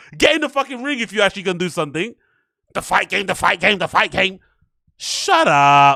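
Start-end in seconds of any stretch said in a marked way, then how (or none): 2.7-4.4 mocking imitation of confident know-it-all pundit voice. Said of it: "people like this that talk like this".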